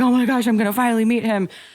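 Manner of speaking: mock, high, tearful crying speech. Retelling the anxious trip to the airport to meet him: imitating crying while talking. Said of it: "crying and just like".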